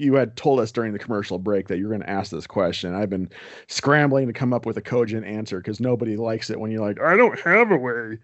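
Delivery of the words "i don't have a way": dopey idiot voice, high and slow. Asked a tough question on air, showing an answer nobody likes: I'm-an-idiot voice. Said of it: "that's my I'm an idiot voice".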